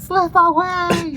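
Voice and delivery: high, slow, stretched-out scream.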